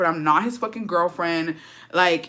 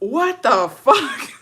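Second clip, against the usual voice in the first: put-on, loud, high, furious fed-up outburst; 6 semitones higher, 5 dB louder than usual. Retelling how a man reacted to hearing about an ex: imitating someone very mad. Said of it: "he was so mad".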